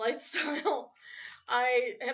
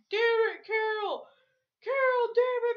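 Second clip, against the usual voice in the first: mock, pitched-up, angry, raging outburst; 11 semitones higher, 4 dB louder than usual. Telling someone how their usual rant sounds: imitating an angry rant. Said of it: "rant and rage like you normally do".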